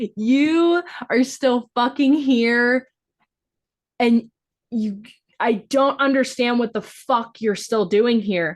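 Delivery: tearful half-laugh, crying and laughing, drawn-out "you". Retelling a character's line from the bathtub scene: imitating crying while laughing. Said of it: "emotional and she is crying, but she's almost, like, laughing".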